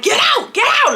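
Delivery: put-on very high, childish, furious screaming. Retelling ordering a man out, screaming. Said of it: "I'm screaming".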